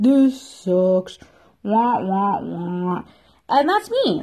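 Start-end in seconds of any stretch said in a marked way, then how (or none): 0.0-3.0 slow, grumpy cartoon bear voice. Imitating a grumpy cartoon bear complaining: Grumpy Bear voice. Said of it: "Grumpy Bear still kinda got into the action, but he's like".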